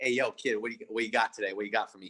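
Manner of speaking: put-on odd New York accent. Retelling a Florida guy who talks to him, imitating his weird New York accent. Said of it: "he has this weird like New York accent".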